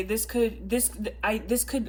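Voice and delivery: stammering, restarting the words with false starts. Giving a tarot card reading to viewers, stuttering. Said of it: "sorry, I'm stuttering".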